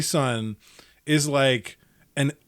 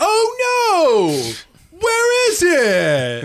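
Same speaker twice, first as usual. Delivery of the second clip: mock very high, exaggerated, overly animated little-kid voice; 7 dB louder than usual. Retelling a toddler losing track of his cup at the kitchen table: imitating an overly animated toddler. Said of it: "the overly animated".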